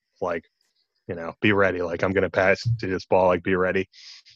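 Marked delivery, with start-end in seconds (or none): 1.4-3.9 low muttering under the breath. Retelling a game story, quoting Michael Jordan under his breath. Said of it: "saying under his breath".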